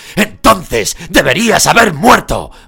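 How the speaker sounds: loud roaring, bellowing.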